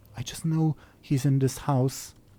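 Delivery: soft, secretive, hushed fairy voice stage whisper. A game master voices a fairy answering the players, as a half-whispering fairy. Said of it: "she whispers to you".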